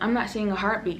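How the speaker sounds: ordinary delivery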